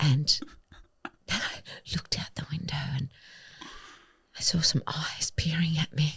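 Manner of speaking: sexy, slow delivery. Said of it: "getting out of the shower really sexily and slowly".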